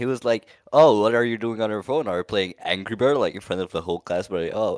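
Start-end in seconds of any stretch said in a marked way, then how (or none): none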